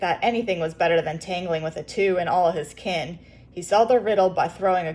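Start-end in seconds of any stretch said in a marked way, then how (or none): none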